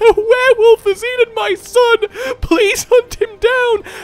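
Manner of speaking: play-acted very high, loud sobbing plea. Describing a game scene with a woman asking for help, imitating a crying woman. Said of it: "she'd be crying".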